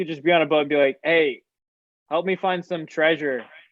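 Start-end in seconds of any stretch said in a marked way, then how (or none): 1.0-3.4 level, uninflected, flat one-note monotone. Imagining asking sea animals for help from a boat, in a flat monotone. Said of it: "it's like just monotone".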